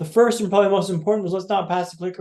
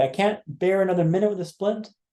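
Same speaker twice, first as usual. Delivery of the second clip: ordinary talk, nothing marked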